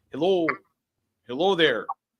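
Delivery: put-on very quiet, soft, high Midwestern accent. Opening a group read as the first voice, in a Midwestern accent. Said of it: "that was like Midwestern".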